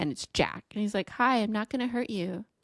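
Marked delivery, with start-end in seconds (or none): 1.1-2.4 put-on innocent nice-boy voice. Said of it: "little nice boy".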